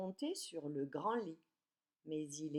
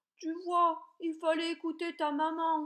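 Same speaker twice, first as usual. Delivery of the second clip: calling out in booming big voice, higher and louder; 11 semitones higher, 8 dB louder than usual. Reading a story aloud, the big bear calling after the girl: shouting in a big voice. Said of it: "lui crie de sa grosse voix".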